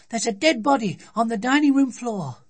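very high-pitched, shrill, loud crying out. Sophie runs into the kitchen to her mum, crying out. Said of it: "she cried".

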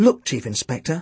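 ordinary talk

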